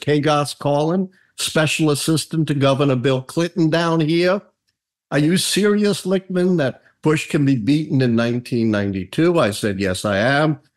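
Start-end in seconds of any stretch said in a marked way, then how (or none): 0.0-9.4 heavy, strong Southern American drawl. Retelling a phone call from a governor's assistant, the speaker uses a strong southern accent. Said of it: "a strong Southern accent".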